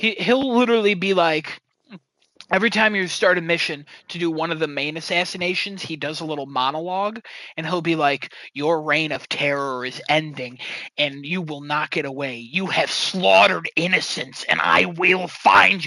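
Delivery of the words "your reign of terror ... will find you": cryptic, dark, horrible, creepy killer voice. Describing a character's monologue at the start of each assassination mission, dark creepy assassin voice. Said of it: "his voice becomes like this dark, cryptic, horrible".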